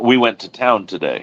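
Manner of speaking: voice settles down with falling tone on today. Statement example after question examples, with a falling tone on 'today'. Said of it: "the inflection in their voice drops at the period to signify the end of a sentence".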